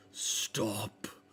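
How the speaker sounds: mammoth creature voice. Voicing a woolly mammoth that calls to fleeing players: woolly mammoth speaking. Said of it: "you do hear it go".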